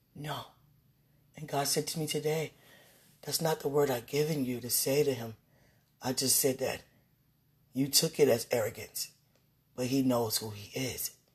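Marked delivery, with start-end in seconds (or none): none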